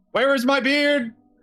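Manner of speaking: high-pitched voice. Playing a character whose beard just vanished: much higher voice. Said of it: "Your voice is much higher".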